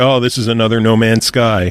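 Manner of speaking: normal talking voice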